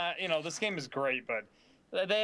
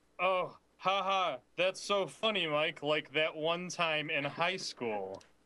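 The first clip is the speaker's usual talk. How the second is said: deflated, joyless, dejected, very slow delivery. Acting out rereading a transcript line aloud: mock dejected tone. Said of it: "you sound dejected".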